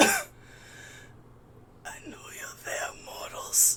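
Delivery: labored, strained croaking voice, very slow, drawn out. As the players gather around the saint, it speaks to them: strained croaking voice. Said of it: "very strained, uh, and it kind of croaks out".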